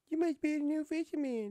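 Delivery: very high, loud put-on character voice. Voicing a game character speaking to the player, higher-pitched character voice. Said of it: "It's higher pitched".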